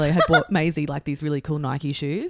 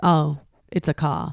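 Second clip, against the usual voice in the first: deflated, very slow, drawn-out disappointment. Retelling how security staff reacted on finding toy cars: imitating disappointed security staff. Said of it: "they were just so bummed to be like".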